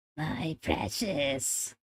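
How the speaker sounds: clumsy, bad, whispered goblin-like little-creature voice, not quite landing. Trying a Gollum voice after mentioning Gollum: bad Gollum voice. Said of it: "I cannot do a Gollum voice".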